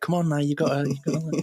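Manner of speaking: mum voice, urging and chivvying. Recalling being sent to bed as a child: imitating his mum. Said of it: "my mum going".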